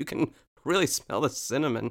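put-on talking while coughing. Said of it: "coughing as she says it".

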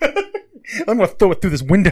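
put-on rowdy metal fan voice. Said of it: "that's my Pantera fan impression".

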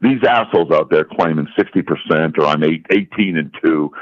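ordinary delivery

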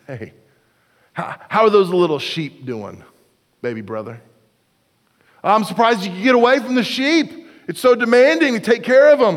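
put-on patronising, condescending, talking-down tone. Retelling a Bible story, Eliab speaks to his baby brother: mock-condescending. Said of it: "It was condescension".

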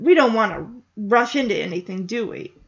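ordinary talk, nothing marked

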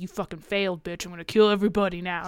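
put-on whisper. Retelling how President Snow whispers in Katniss's ear: imitating President Snow whispering. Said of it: "whispers in her ear".

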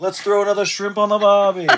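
loud, high, put-on Australian accent. Joking about a new jersey accent, the speaker does a mock aussie accent. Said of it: "more Aussie than Jersey".

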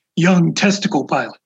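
feigned, very serious, grave delivery. Speaker retells a poker player's running joke about a colleague: mock-serious tone. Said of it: "say in a very serious tone".

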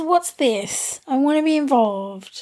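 small, curious little kitty voice. Voicing the curious cat as it comes to the microphone, in a little cat voice. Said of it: "In his little cat voice".

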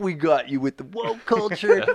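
gleeful, triumphant prank-show announcer voice. Imagining Ashton Kutcher jumping out to reveal a prank: Ashton Kutcher impression. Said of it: "waiting for Ashton Kutcher's punch, punk ass to jump up and be like".

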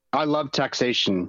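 plain

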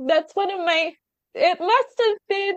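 overcome, voice gone very high. Telling someone a personal story about their own children: emotional. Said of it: "I'm so emotional right now".

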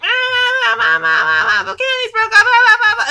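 acted, very high, loud, drawn-out broken wailing sobs. Retelling a TV scene where the actor is hysterical: imitating Bill Bellamy sobbing hysterically. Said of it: "He was so broken up, it's just like".

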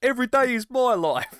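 very high, odd put-on English accent. Quoting a wrestler in a weird English accent. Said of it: "in that weird English accent".

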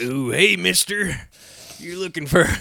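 put-on old-time Western accent. Told to talk in old-time western voices in their online game, trying an old-time western accent. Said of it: "That was a great old-time Western accent".

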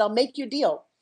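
ordinary delivery

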